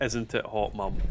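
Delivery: ordinary delivery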